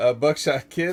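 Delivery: ordinary delivery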